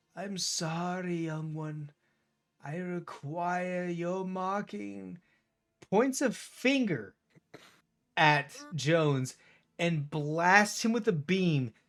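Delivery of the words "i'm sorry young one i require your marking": put-on kindly, courteous, polite old man voice. Voicing an old man who hobbles over to Jones: pleasant old man voice. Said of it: "this old man pleasantly hobbles over".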